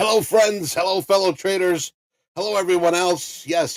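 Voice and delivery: rousing, loud, high-pitched call. Opening a live trading stream, the host greets viewers, speaking really loud. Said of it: "I'm speaking really loud to wake everybody".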